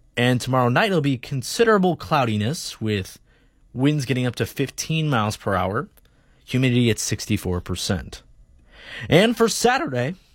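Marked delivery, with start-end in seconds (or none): 9.0-10.1 voice cracks, jumping way up high. Reading a weather forecast, with a voice crack. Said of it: "nice voice crack there".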